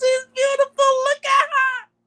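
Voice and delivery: tearful, very high-pitched, loud crying wail. Retelling her reaction at a graduation, imitating her own crying. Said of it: "it was coming out of my face".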